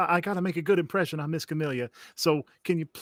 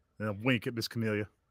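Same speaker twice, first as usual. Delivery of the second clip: ordinary delivery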